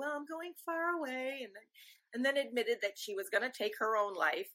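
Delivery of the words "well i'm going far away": put-on dreamy voice, higher, quieter, slower. Retelling a phone call where the speaker's mom sounded strange; imitating Mom's dreamy voice. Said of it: "she kind of said in this really dreamy way".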